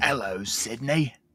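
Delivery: horror-movie killer voice with a British accent. Imagining a movie killer's voice with a British accent: Ghostface voice, British accent. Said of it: "Ghostface voice, but in a British accent".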